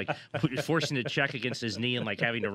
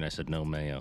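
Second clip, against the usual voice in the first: put-on whisper, lower pitched; 7 semitones lower than usual. Imagining a coach on the phone about a food order: whispering as Mike Mayock.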